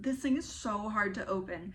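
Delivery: ordinary delivery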